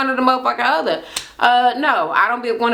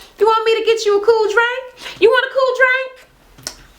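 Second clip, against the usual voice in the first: very high, doting, hostess-style delivery; 12 semitones higher than usual. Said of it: "My grandma talk like that".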